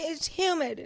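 high, whiny complaining tone. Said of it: "Yeah, like".

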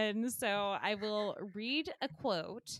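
plain

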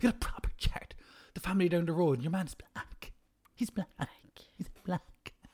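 put-on old Irish woman voice. Repeating the other speaker's remark the way an old Irish woman would: old Irish woman voice. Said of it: "like an old Irish woman saying".

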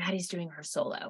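very soft, hushed aside. Retelling what Melissa told them in the dressing room: imitating a hushed voice. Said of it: "she tells us in a hushed voice".

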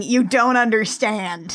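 ordinary delivery

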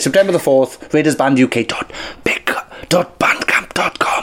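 hushed whisper. Announcing a bandcamp release date; whispering. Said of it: "I don't know why I'm whispering".

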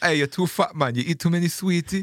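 put-on Jamaican accent. Retelling what a man on a boat said to him, imitating a Rasta man. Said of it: "this Rasta man said to me".

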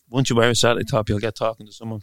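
ordinary delivery

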